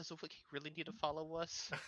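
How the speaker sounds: nervous, soft, hushed half-whisper. A player's character, led off by a security guard, looks back, half-whispering. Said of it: "and I just sort of whisper".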